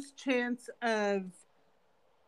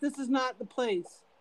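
ordinary talk, nothing marked

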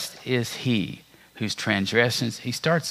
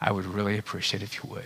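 mock earnest, soft, deeply sincere, heartfelt tone; 7 dB quieter than usual. Retelling his dad's reply about forgiving him, quoting Dad's very sincere voice. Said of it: "in the most sincere voice I've ever heard".

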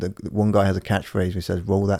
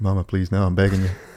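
put-on pleading voice; 3 dB louder than usual. Retelling a movie scene, quoting Bobby begging his mama: imitating Bobby Boucher pleading. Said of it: "Bobby's like".

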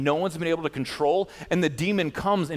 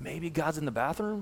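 soft, dry, mocking sarcastic delivery; 7 dB quieter than usual. Retelling Elijah taunting the 450 prophets, retelling Elijah's sarcasm. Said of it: "he's got a good sarcastic wit to him".

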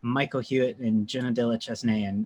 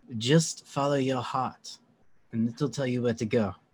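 slightly smarmy put-on French accent; 4 dB quieter than usual. Retelling a woman's answer to the speaker, in a french accent. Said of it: "Here's my here's my French accent".

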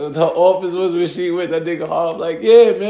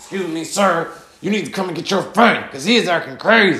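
mock tough, stern voice. Retelling a woman who called him on the phone, mimicking her tough voice. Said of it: "The bitch got the tough voice on".

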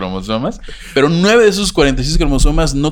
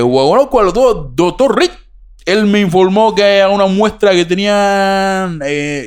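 put-on Cuban Spanish accent, pitched up; 5 semitones higher than usual. Reading out a doctor's testimony, Dr. Chacón in put-on Cuban accent. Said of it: "Voy a tratar de hacer mi acento cubano".

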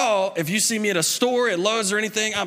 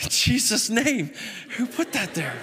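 usual speaking voice

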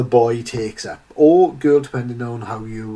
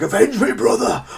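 imitated scream, higher; 10 semitones higher than usual. Retelling an animation where a soldier is being swallowed: imitating a scream. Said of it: "he's screaming out".

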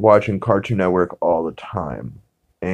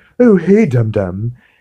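put-on cartoon character voice; 3 semitones higher, 4 dB louder than usual. Retelling a Stone Age cartoon scene where the Great Gazoo shows up, Great Gazoo voice. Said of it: "He kind of has like a deeper Stewie voice".

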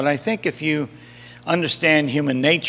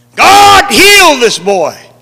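shrill, very loud, high-pitched, at the top of the lungs; 11 semitones higher, 13 dB louder than usual. Retelling how the disciples prayed over a boy, retelling a loud prayer. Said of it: "they just began to pray in a loud voice".

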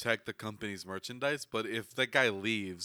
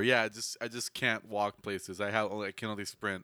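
ordinary delivery

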